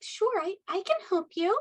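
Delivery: high, eager, wide-eyed street urchin voice. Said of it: "playing the urchins ... very wide-eyed".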